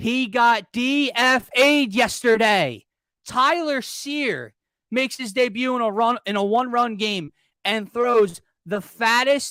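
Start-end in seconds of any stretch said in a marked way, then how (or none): 0.0-2.8 loud, slow, drawn-out yelling. Complaining about a pitching decision, yelling. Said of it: "I know I'm yelling in this microphone".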